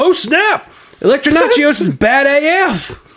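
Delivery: very slow, high, drawn-out put-on drawl. Reading out a listener's comment about Defenders episode five: voice for Sherman. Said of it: "your voice for Sherman".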